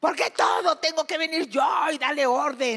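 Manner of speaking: acted-out, high-pitched, scolding yell. Describing coming home to disorder and starting to yell: retelling her own yelling. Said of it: "empiezo a gritar".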